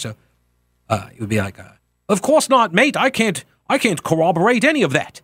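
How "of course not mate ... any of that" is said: terrible put-on British accent, slower. Acting out a British man's reply, in a terrible British accent. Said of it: "I guess he's British".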